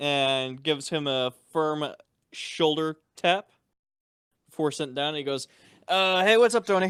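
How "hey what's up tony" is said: offhand, hurried, tossed-off delivery. Acting out a friend's greeting as he sits down, quick and rushed. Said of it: "the way you said it really quickly".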